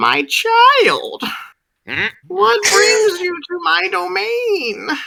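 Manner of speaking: very high-pitched, bird-like creature voice. From all around, a voice addresses a new arrival, very bird-like voice. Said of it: "a very bird-like voice".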